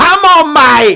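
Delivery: very high, shrill, yelled call. Imitating a friend's voice, pushing for a preview: imitating Paul shouting. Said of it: "he goes".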